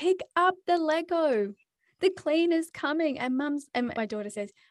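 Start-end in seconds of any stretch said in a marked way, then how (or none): 0.0-3.2 put-on loud, high-pitched yell. A mother retells what she yelled at her kids, retelling yelling at the kids. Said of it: "I was yelling at the kids".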